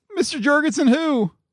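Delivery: high-pitched, put-on calling voice. Hiding in the closet, Larry calls out to the man at the door in a high-pitched voice. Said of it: "Larry called in a high-pitched voice".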